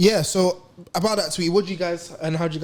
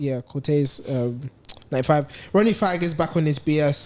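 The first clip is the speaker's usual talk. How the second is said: ordinary talk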